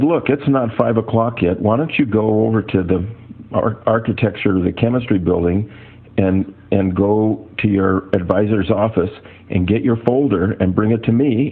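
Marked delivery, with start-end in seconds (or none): none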